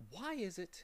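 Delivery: hushed, very soft-spoken, slightly rising pitch. Milo, bothered by one curious thing, asks the mathematician quietly. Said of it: "he said quietly".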